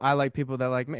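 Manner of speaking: ordinary delivery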